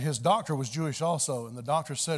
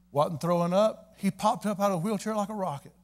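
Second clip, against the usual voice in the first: ordinary delivery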